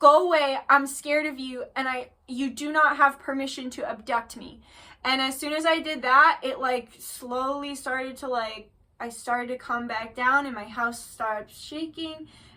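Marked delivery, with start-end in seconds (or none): none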